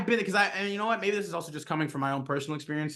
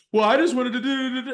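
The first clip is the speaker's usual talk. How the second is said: put-on defensive, high, raised six-year-old voice; 8 semitones higher, 5 dB louder than usual. Mocking a game master who sounds like a six-year-old: imitating a childish voice. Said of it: "he's trying to be like".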